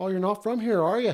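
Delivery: played-up, Irish-sounding accent. Riffing with another speaker about being from Nova Scotia, doing an Irish accent. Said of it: "so fucking Irish".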